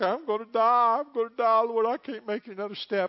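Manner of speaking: exhausted, desperate crying out. A speaker acts out a listener crying out to the Lord, acting out crying out. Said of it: "you're crying out like".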